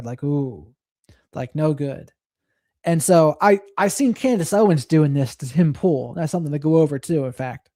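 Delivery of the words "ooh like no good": low, soft, calm, patronizing tone. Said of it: "their calm, patronizing tone there".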